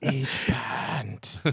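put-on creepy cartoon whisper. Joking about what the giant parade balloon seems to say: put-on whisper as balloon Bart. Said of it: "You can kinda hear it whisper".

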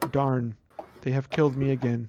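deadpan, poker-face, flat, emotionless monotone delivery. Imitating a gamer who feels emotions but shows none: mock emotionless voice. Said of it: "feeling emotions but not expressing them".

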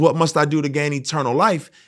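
ordinary delivery

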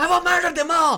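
very high, loud, furious raging yell. Speaker acts out freaking out while a friend tries to hold them back, retelling a raging shout. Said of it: "And I freak out every time".

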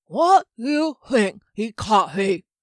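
loud, slow, struggling speech with stiff jaw, lips. Reading a story, a character just freed from a freezing spell tries to speak, stiff-jawed. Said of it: "where [name] was just coming out of the spell that had frozen him in place. He flexed his hands and feet, and though he could move his jaw, it was stiff and the lips and tongue were not quite ready".

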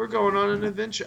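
flat, creaky monotone with no rise. Mocking a trailer's lifeless line reading, in a monotone Nathan Drake voice. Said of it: "it was completely monotone".

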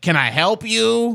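very high, loud chain-smoker lady voice. Speaker retells entering a building and a security guard asking: imitating a security guard lady. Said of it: "You make it sound like she's like a 55-year-old smoker".

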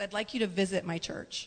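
normal talking voice

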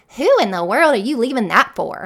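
attitude-laden delivery. Showing parents the wrong way to ask a kid this, with attitude. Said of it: "not in a way of like an attitude".

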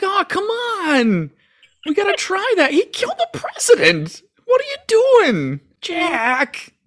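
put-on very slow, very high, swooping, drawn-out whine. Imitating one whiny guy in the crowd: imitating a whiny bystander. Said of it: "one whiny guy there. He's just like".

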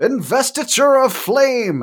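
very high, dramatic, yelled shout. Voicing a character who yells out a spell name: character yelling a spell name. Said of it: "and then he yells out".

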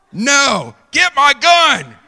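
shrill, booming, swooping, very loud drawn-out yell. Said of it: "I yell, yell up to Danielle".

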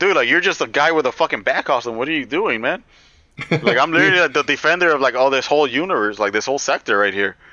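cocky, snarky, taunting tone. Acting out Hal Jordan talking down to Batman: imitating Hal Jordan taunting. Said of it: "He's really, like, taunting him".

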